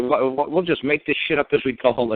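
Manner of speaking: furious, boiling-over, sputtering outburst with words tripping. Retelling a prosecutor's outburst at the judge: imitating a furious rant. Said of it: "he just lost his cookies".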